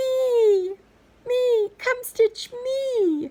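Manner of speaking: tiny little voice, very high and very slow. Speaker describing a project calling out mid-work, in a little voice. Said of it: "you hear this little voice saying".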